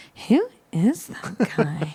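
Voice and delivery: very slow, soft mutter under the breath. Retelling a movie scene, quoting a woman's line: imitating muttering under breath. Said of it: "under their breath".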